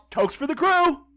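very high, playful, acted-out goofing-around shout. Retelling tipping a casino dealer while drinking, retelling own shout. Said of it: "and I shout".

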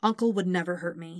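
ordinary delivery

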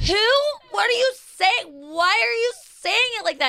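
put-on really loud, drunk, baffled tone. Retelling how a wasted girlfriend reacted to her partner, mimicking her really loud. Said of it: "Like really loud".

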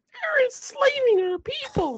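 put-on little person voice, very high and slow. Joking about a movie, a speaker blurts a line: little person voice. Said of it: "Did you just do a little personal voice?".

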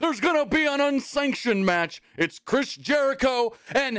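put-on very high, shrill, hyped-up hollered yell. Redoing an impression of a man announcing a match, to do it better, imitating someone yelling. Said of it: "I can do that impression better".

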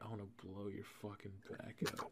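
very hushed, barely audible whisper. Retelling what friends whispered in [name]'s ear: imitating a whisper. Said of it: "they would whisper sexual things in my ear".

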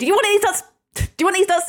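high, loud, blurted taunt. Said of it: "As soon as he starts saying".

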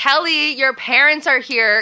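loud, yelled delivery. Retelling how Gabby screamed up to Kelly: retelling a yell. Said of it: "And then she, like, screams up".

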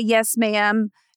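ordinary talk, nothing marked

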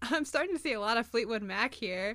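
usual speaking voice

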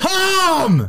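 loud, very high, stretched, drawn-out yell. Showing what it would sound like to just yell it: yelled. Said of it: "What if I just yelled it? ... Like this?".

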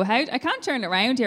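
ordinary talk

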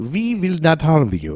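put-on German accent, high and swooping. Telling a story, voicing the beings who speak to a man: German-sounding accent. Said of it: "That's German".

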